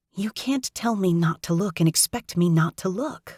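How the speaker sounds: harsh, hissed whisper. Reading a story aloud, answering a scolding character: harsh whisper. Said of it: "I harshly whisper back".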